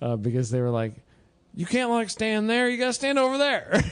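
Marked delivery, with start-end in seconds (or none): 1.5-3.8 play-acted, very high-pitched shouting. Retelling being yelled at during an event: imitating someone yelling. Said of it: "I got yelled at".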